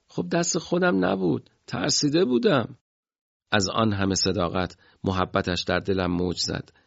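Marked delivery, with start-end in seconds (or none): 0.2-2.8 play-acted, kind, gentle, affectionate voice, pitched very high. A teased friend replies while adjusting his belt, in a kind tone. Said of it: "با لحن مهربونی گفت".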